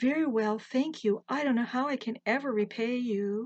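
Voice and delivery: plain reading voice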